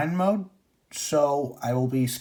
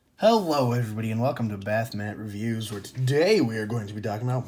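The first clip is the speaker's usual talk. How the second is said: put-on deep show-host announcer voice; 4 semitones lower than usual. Host opening the review show: announcer voice. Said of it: "Why am I doing like an announcer voice?".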